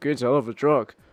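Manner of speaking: mock giggly, stoned laughing delivery. Quoting a man who laughs stoned out of his mind, imitating a stoned laugh. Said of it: "He just laughs like it's just stoned out of his mind".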